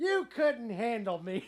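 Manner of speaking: high, yelled heckling tone. Retelling a line the friend yelled from the back of the room: imitating someone yelling. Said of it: "She yells out".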